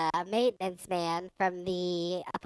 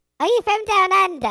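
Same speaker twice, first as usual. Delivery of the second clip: very high, loud chipmunk squeak. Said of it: "British chipmunk".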